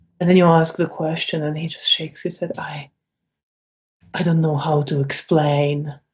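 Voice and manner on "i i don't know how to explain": guilt-laden, shame-filled, slow, halting, ashamed voice. Voicing a shaking character asked what is wrong: guilty and ashamed. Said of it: "this guilt and shame in his face".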